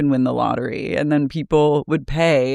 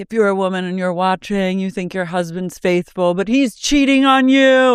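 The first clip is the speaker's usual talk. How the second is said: high, screaming, play-acted jeering voice; 5 semitones higher than usual. Retelling how a saleswoman and her daughter taunted viewers, imitating Vanna Marchi's screaming taunt. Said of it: "And they would just like scream".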